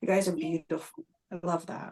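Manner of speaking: emotional, teary voice, on the verge of tears. Thanking the community for their love and support, emotional, tearing up. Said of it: "Sorry, I'm emotional too".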